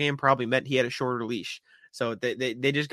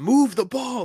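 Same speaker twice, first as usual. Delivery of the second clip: put-on scream, very high and shrill; 10 semitones higher, 4 dB louder than usual. Retelling what a player yelled from the sidelines: imitating Marcus Smart yelling. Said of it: "Marcus Smart yelled out".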